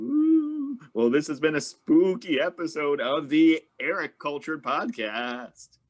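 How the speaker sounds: very slow, ghostly, drawn-out, swooping spooky voice. Closing a spooky podcast episode, trying out a put-on spooky voice. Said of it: "Is that a good voice?".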